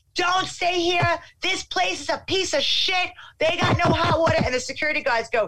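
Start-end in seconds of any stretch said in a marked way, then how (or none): 0.2-4.4 loud, high, shrill screamed rant. Recounting a dispute with security guards, calling out to arriving customers: retelling screaming. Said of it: "I'm screaming".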